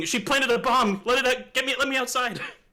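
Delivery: loud yelling, pitched very high. In a tabletop game, a player's character faces security, yelling. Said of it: "I'm yelling".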